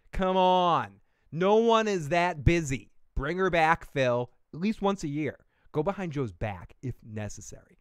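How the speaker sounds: sassy, attitude-filled delivery. Reading a written text aloud with attitude. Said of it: "I'm going to read this with some attitude".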